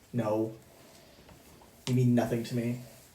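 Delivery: grumbly, grumbling voice. Voicing the grumbling father answering the player's call: grumbling father voice. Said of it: "a grumbling that sounds like your dad".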